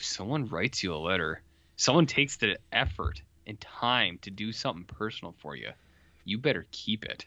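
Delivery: stern, threatening, menacing tone. Retelling a character's reply to another, imitating a threatening tone. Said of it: "He says it in that tone, too. It's very threatening".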